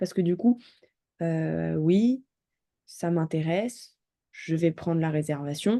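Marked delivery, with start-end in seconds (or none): 1.8-5.8 lacklustre, joyless, dull, unenthused delivery. Giving feedback, imitating how the listener spoke, flat, monotone delivery. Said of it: "c'est un peu monotone".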